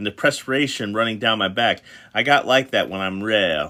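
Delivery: plain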